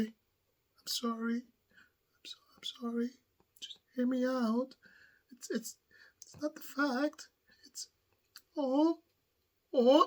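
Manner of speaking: coy, very quiet, high, hushed, stammering voice. Describing a man who had yelled at the judge, mimicking his soft, coy voice. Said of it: "soft voice, hands together, mm, looking away, all coy".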